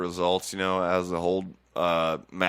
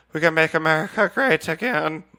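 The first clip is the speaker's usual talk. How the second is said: put-on Irish boxer voice, higher and louder; 9 semitones higher, 6 dB louder than usual. Answering an interviewer's question as Katie Taylor: Katie Taylor impression. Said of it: "that was pretty good".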